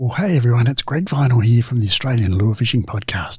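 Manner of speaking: speaking in a whisper. A podcast host opening an episode for listeners, whispering. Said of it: "why it is that I'm whispering".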